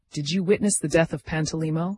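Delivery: ordinary delivery, nothing marked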